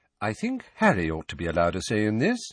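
plain reading voice

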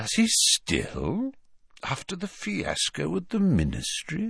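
delicate, soft, swooping, disbelieving inflection. Snape questions Bellatrix further, with a delicate disbelieving inflection. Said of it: "his voice delicately inflected to suggest his disbelief".

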